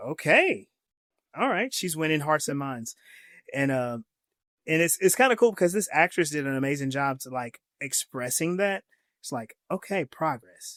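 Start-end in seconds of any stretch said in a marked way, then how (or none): 0.1-1.7 surprised, touched voice, high and swooping. Retelling Lockley's reply after being praised: imitating Lockley, surprised and touched. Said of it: "surprised and affected by".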